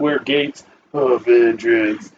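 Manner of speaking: slow, dark, menacing, very scary voice. Retelling what a man said into the microphone, imitating a very scary voice. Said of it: "he said it in a very scary voice".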